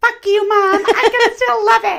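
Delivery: put-on high little-kid voice.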